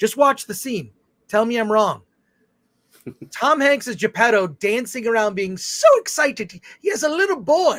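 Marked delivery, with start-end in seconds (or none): 6.8-7.8 sliding into put-on Irish accent, pitched up. Describing a scene from the Pinocchio film, slipping into an Irish accent. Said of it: "Why did I go into a Scottish accent? It's an Irish accent".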